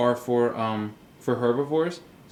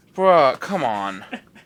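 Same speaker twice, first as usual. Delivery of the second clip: louder snickering; 6 dB louder than usual. Reading a simple book with a companion, snickering. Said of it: "(Jake snickers)".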